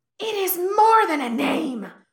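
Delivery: loud high-pitched screech. Narrator voicing the spirit answering the cultivator: screeching Ghostmaker voice. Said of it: "the spirit screeches".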